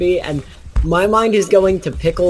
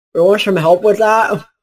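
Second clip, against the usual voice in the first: loud, spoken through a mouthful of half-chewed food; 4 semitones higher, 5 dB louder than usual. Player voicing a character mid-sandwich, talking with mouth full. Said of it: "with his mouth half full of sandwich".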